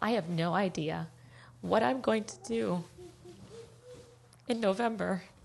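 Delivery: emotional, halting, breaking mid-phrase. Speaker describing being a climate change refugee, getting emotional. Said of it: "I am going to get emotional".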